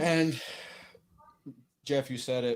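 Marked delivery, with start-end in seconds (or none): 1.8-2.6 low, soft, unenthusiastic deadpan. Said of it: "Don't sound too excited".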